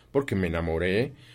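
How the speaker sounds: ordinary delivery, nothing marked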